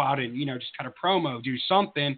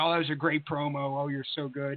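put-on fawning, flattering tone, quieter; 6 dB quieter than usual. Retelling what a colleague said on their return: imitating someone flattering. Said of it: "blowing smoke up your ass".

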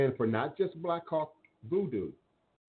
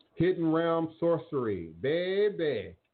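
pitched-up New Orleans accent; 5 semitones higher than usual. Repeating what she says on the stream, in that New Orleans accent. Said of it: "in that New Orleans accent".

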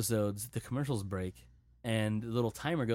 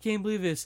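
sobbing through the words, pitched-up crying voice; 10 semitones higher than usual. Retelling a breakup scene where he cries, imitating him crying. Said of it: "you see him crying like".

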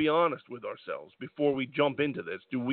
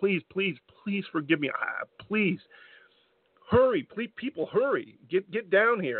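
breaking-down, desperate voice, pitched higher; 4 semitones higher than usual. Retelling what Daniel Bryan said while beside himself: acting out Daniel Bryan's breakdown pleading. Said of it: "having a nervous breakdown practically over it".

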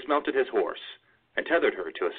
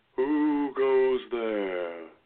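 ghostly, echoing spirit voice, as in a cave; 3 semitones higher than usual. Narrator reading a voice calling out across a cave: ghostly echoing voice. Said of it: "a ghostly voice echoed throughout the cave".

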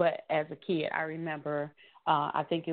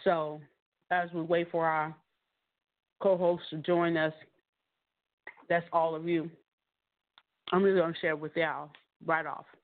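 speaking with mouth full. Live host opening the show while waiting for co-hosts, talking while chewing. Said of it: "I was chewing on something".

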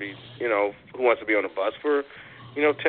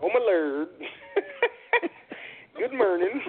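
very high, animated voice with swinging, swooping pitch; 13 semitones higher than usual. Repeating the line on request for another caller: Madea voice. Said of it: "can you say it again, [name]? How did it sound?".

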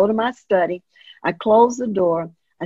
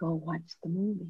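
very calm, hushed voice, much quieter; 2 semitones lower, 15 dB quieter than usual. Retelling what Spirit said to them again, in a very calm, quiet voice. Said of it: "very calmly, very quietly".

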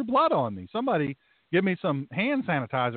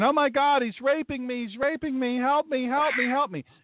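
mock, high-pitched woman's screaming; 8 semitones higher than usual. A pastor recounting a woman who came in, imitating a woman screaming. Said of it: "then she starts screaming".

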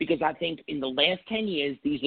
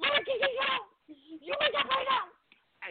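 imitated screaming, higher pitch; 3 dB quieter than usual. Retelling a soap scene where an actress identifies a body: imitating Maura West screaming. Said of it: "And she started screaming".

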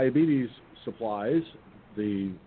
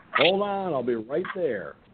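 play-acted, hollered voice; 4 semitones higher than usual. Retelling someone banging on the door while dressing: retelling hollering out. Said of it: "I hollered out".

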